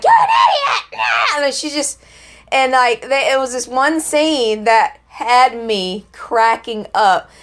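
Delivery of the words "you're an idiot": mock, very high-pitched little-girl screech. Retelling a scene where the daughter screams at people: imitating a girl screaming. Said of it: "She's screaming at people like".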